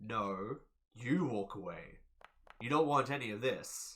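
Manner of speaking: intimidating tone. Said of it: "Roll me an intimidation".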